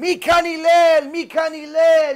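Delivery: long, loud, high-pitched, drawn-out scream. Retelling a story, acting out a man calling for Hillel: imitating someone screaming. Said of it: "He's screaming like he never saw him before".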